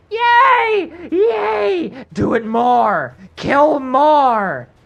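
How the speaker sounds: shrill, booming, very high, very loud delighted screaming. The game master voices Osrin after a spell lands: Osrin screaming in delight. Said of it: "Osrin is screaming in delight".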